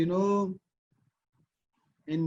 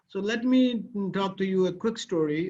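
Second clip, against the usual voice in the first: normal talking voice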